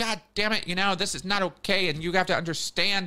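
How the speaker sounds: high, angry, pissed-off scolding shout. Retelling how they yelled at her over some situation, retelling own angry yelling. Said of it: "I was over there yelling at her like".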